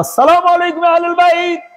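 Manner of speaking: high, formal, called-out tone.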